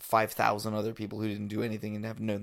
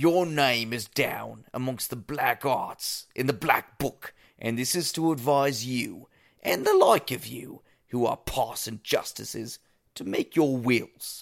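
bad, exaggerated, loud put-on British accent; 3 semitones higher, 5 dB louder than usual. Reading a couple of passages aloud to everyone: bad british accent. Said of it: "I just wanted to read a couple in a bad British accent".

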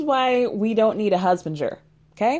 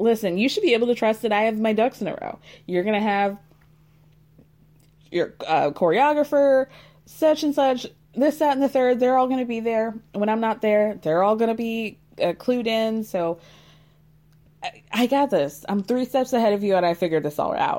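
ordinary delivery

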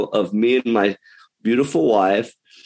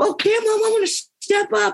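put-on very high, prepubescent young boy voice. Retelling answering his mom's pep talk as a kid, in a prepubescent boy voice. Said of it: "In my prepubescent voice".

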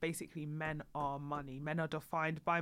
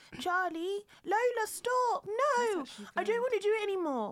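put-on young child voice, higher and louder; 4 dB louder than usual. Doing a children's voice from Charlie and Lola. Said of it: "a Charlie and Lola".

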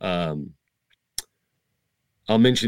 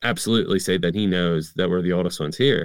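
usual speaking voice

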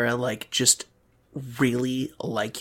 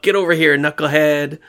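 mock playful teasing, higher and louder; 3 semitones higher, 11 dB louder than usual. Acting out a friendly sibling-rivalry jab between two characters: mock friendly sibling teasing. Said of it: "friendly, like, sibling rivalry kind of fights".

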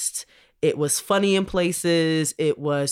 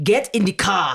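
sudden put-on Nigerian accent; 3 semitones higher, 3 dB louder than usual. Retelling an actor's line from the movie: imitating a nigerian accent. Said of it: "Went straight Nigerian".

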